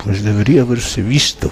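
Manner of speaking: muttering through clenched teeth. Narrator giving their reply to their mother, muttered through teeth. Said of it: "contesté entre dientes".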